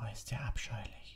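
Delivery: quick, hushed, slightly high whisper. A character with her ear against a classroom door, whispering. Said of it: "wisperte Hermine".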